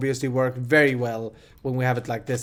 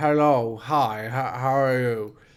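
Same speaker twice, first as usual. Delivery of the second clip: put-on impaired speech, slower. Showing viewers how they talked after a tooth repair, imitating impaired speech. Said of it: "I've been talking like".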